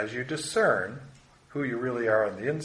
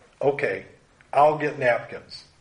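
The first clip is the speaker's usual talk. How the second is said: mock annoyed, angry, upset tone; 5 dB louder than usual. Speaker reenacting what they said to her, retelling an angry reply. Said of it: "with an angry tone of voice".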